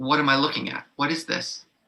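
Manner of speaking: normal talking voice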